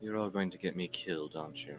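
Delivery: quiet under-breath mutter. A game master voices a character sitting beside her staring companions, muttered under her breath. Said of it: "under her breath".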